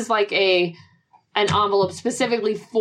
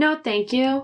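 robotic android voice, higher; 5 semitones higher than usual. Retelling a story, answering a man holding up random things, androidy voice. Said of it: "I keep going forward in my androidy state".

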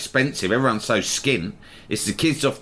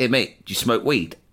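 usual speaking voice

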